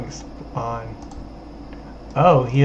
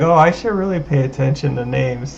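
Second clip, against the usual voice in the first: ordinary talk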